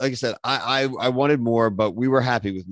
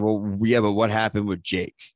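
ordinary talk

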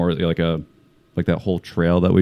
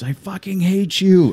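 put-on very high, stretched, drawn-out screeching scream; 13 semitones higher, 3 dB louder than usual. Retelling what someone yelled across the field: imitating someone screaming. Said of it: "he just screams".

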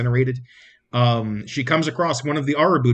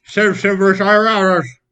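put-on loud, pitched-up, slurred, mushed words as if mouth full; 7 semitones higher, 7 dB louder than usual. Describing a character holding a weapon in her teeth, the speaker says the phrase put-on slurred. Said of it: "but really slurred".

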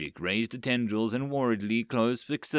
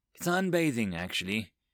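plain

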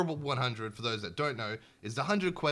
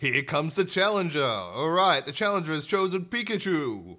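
loud, high arena announcer voice; 5 semitones higher, 7 dB louder than usual. Suggesting the game needs an announcer as you walk onto the pitch: announcer voice. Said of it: "it needs like an announcer voice".

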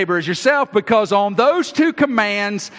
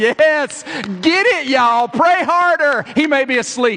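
mocking, dripping sarcasm, pitched up and slow; 5 semitones higher than usual. Retelling Elijah on the hillside egging on the prophets: imitating sarcastic cheering. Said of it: "I'm doing it sarcastically".

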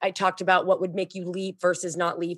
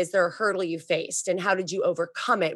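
ordinary delivery

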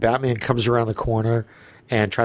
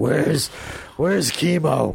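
put-on raspy voice, higher; 5 semitones higher than usual. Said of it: "Bale was like".

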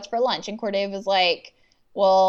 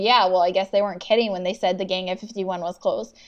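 usual speaking voice

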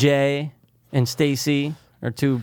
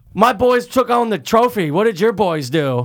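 high, loud, mocking character voice; 7 semitones higher, 5 dB louder than usual. Making fun of the actor playing Skip Engblom, Skip Engblom impression. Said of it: "sound like Little Nicky a little bit".

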